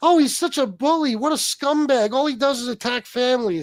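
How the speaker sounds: exaggerated put-on indignation, high and swooping. A speaker acts out people's reaction after he attacked another man's family: mock outrage. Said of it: "And it was like".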